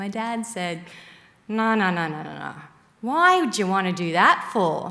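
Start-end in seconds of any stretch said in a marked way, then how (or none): 1.5-4.9 put-on strong, thick Australian accent with broad vowels. Retelling the dad's reply on hearing the speaker wants to be a nun, broad australian accent. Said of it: "in his broad Australian accent".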